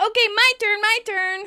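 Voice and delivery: very high, loud shout. Recapping a bouquet toss scene, imitating Monica's shout. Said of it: "Monica shouts".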